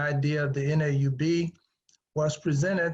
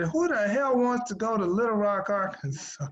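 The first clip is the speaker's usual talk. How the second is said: put-on New York accent, pitched up; 7 semitones higher than usual. Retelling a heckler from the back of the room: imitating a New York accent. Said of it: "with the New York accent said".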